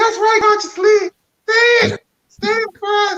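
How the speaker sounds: very high, squealing, gushing fangirl voice. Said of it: "and the girls is like".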